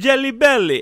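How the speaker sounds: put-on shrill, very loud, yelled classic Italian accent. Retelling a man yelling who won the race, in a yelled Italian accent. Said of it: "it's just a classic Italian accent".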